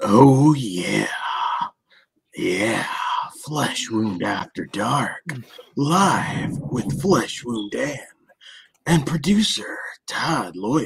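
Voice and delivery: very slow, seductive, purring sexy voice. Opening the after-dark show intro, joking: put-on sexy voice. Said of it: "You have to do the sexy voice".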